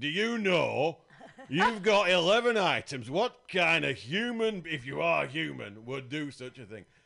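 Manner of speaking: very loud, high-pitched northern English accent. Speaker confronting a shopper with eleven items in the ten-items queue, northern english accent. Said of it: "And that's when I want that accent".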